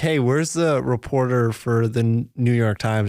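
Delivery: ordinary delivery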